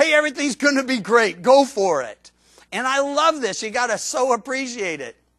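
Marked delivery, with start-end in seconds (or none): 0.0-2.3 loud, mock sarcastic cheer, falsely encouraging. Retelling a prophet's words to the man who hates him, sarcastically. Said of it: "sarcastically says".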